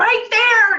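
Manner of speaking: mock yelling. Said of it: "yelled at me".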